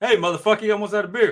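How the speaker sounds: very loud, high-pitched put-on shout. Pitching a talking beer koozie line, Samuel L. Jackson voice. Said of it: "I want it to be in the Sam Jackson voice".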